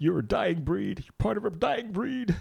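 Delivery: mock emotional, choked-up, very high voice. Retelling a bus driver's words of thanks: imitating a choked-up driver. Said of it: "he was all choked up".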